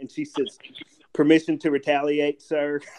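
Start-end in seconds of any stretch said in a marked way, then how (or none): none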